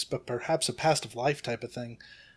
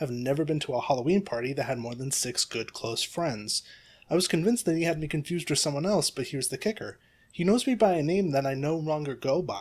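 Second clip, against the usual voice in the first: ordinary delivery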